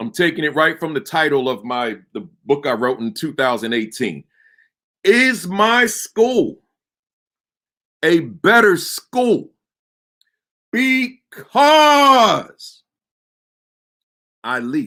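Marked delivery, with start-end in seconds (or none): 5.0-14.9 because leaned on hard with heavy stress. Repeating his book's title question, deliberately putting stress on because. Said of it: "I put that emphasis on that word because deliberately".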